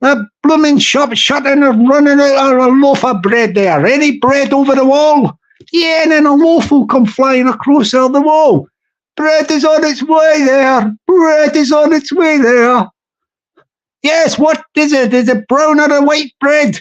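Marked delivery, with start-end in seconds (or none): 9.2-16.8 chatty put-on Irish accent. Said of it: "We'll do an Irish accent".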